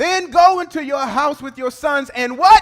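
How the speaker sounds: preacher-style delivery, loud and high.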